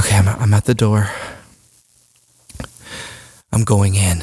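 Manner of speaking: out of breath, catching breath while speaking. Reaching the door after climbing more than eight stairs, out of breath. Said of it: "so I'm out of breath".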